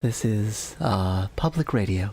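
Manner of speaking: low, up-close asmr-style speaking voice. Speaker greeting listeners, announcing a switch to ASMR voice: ASMR voice. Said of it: "I'm going to speak in A S M R voice now".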